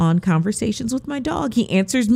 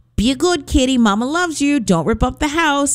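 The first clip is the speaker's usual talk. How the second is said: lilting, sing-song voice; 4 semitones higher than usual. Retelling what is said to the cat when leaving: sing-song voice to a cat. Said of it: "she hears me sing-songing that".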